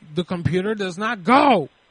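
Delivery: mock yelling. Retelling a call to customer service about a broken computer; retelling a yell. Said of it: "Why are you yelling".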